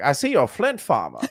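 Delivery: put-on vintage, old-timey nineteen-fifties style voice. Retelling what another player said over game voice chat: imitating a 1950s-style voice. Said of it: "that nineteen fifties voice".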